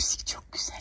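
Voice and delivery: quiet whispered voice.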